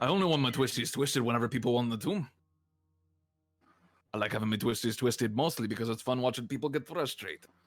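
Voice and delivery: put-on pirate voice with Caribbean accent. Voicing someone who wants their twisties twisted, accidental caribbean pirate accent. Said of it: "We just turned into a Caribbean pirate for a second... went in the wrong accent".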